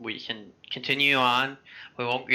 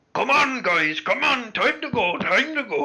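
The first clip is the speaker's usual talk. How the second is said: very high-pitched, loud calling out; 11 semitones higher, 5 dB louder than usual. Voicing a large-fisted man banging on the door early: voicing Thorin. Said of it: "and you hear".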